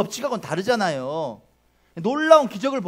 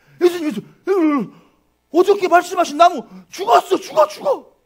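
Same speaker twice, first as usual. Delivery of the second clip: very high, loud, excited put-on astonished cry; 9 semitones higher, 6 dB louder than usual. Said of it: "나 베드로가 한번 대볼게요. ... 막 이랬을 것 같아".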